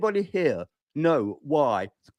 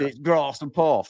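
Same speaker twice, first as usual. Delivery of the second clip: put-on, mock southern English accent. Nottingham speaker mocks how people further south talk, imitating southern English accent. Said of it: "you go south".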